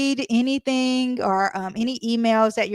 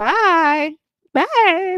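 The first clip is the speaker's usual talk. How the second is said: voice cracking mid-word, pitched up, drawn out; 7 semitones higher, 6 dB louder than usual. Saying goodbye to the audience at the end, voice cracking. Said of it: "my my voice just cracked".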